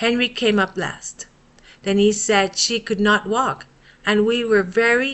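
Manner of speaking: ordinary delivery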